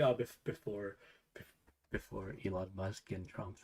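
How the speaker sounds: hushed, slow, drawn-out stage whisper. Retelling how someone hedged an answer: imitating a half-whisper. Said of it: "she, like, whispered it".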